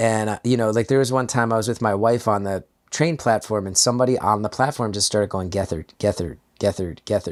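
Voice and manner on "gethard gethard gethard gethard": repetitive, low, flat, droning monotone. Retelling a stranger on a train platform calling out his name, monotone voice. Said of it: "like in this monotone voice".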